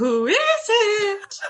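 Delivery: very high, feigned put-on female voice. Someone knocks on the locked door, and the player's character answers in a female voice. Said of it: "Corbin says in a female voice".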